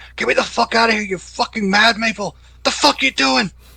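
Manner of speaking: shrill, very loud, high, frantic, panicked screaming. Voicing a captive in a car chase: shouting and screaming. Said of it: "shouting and screaming".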